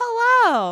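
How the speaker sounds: mock cheerful, confident voice. Retelling how she greeted everyone on entering: imitating a confident, smiling greeting. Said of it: "she's super confident and she's smiling and she's like".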